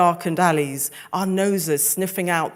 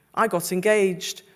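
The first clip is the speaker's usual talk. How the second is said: usual speaking voice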